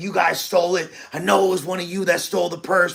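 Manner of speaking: angry, accusing tone, toned down. Retelling how a woman who lost her purse yelled at the group: imitating someone yelling. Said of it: "like yelling at us".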